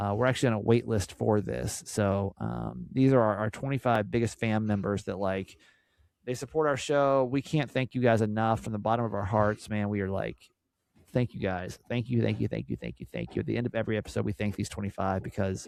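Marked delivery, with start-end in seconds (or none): 11.1-13.4 choked-up, near-tearful, fast, emotional, grateful tone. Host thanking the show's top twenty-five fan members, emotional, near tears. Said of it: "I am emotional".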